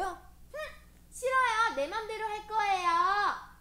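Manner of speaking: put-on defiant childlike voice, high, loud and huffy.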